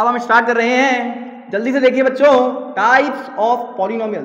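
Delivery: very loud, high-pitched, pumped-up excited shouting. A teacher starting a lesson for students, shouting. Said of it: "सर तो चिल्ला क्यों रहे हो बेटा".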